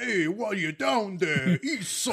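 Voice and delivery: put-on New York accent. Joking about what partners would say, use a put-on new york accent. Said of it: "In their New York accent".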